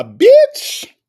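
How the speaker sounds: shrill, very high-pitched, loud squeal. Repeating a word the way it was said, Nesto's high-pitched voice. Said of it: "I had to say it in a high pitch because that's how Nesto said".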